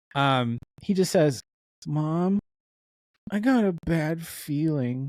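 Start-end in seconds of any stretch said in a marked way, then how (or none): 1.9-5.1 dragging, squirming, uncomfortable, very slow cringey delivery. Mocking a film character's line, mimicking a cringey line delivery. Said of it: "He delivered it like he had pooped his pants".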